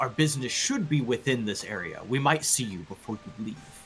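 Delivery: voice brought down low and quiet. Narrating a character saying goodbye after a hug, in a lowered voice. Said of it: "he kind of like lowers his voice".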